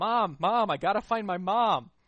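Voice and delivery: put-on very loud, high, drawn-out child's hollering. Retelling how a kid dragging toys behind him yelled: imitating a kid yelling.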